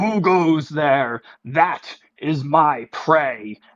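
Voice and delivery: slow, grand, riveting, commanding lordly voice. Retelling what a figure riding a giant frog said, booming riveting voice. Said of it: "with this booming like riveting voice".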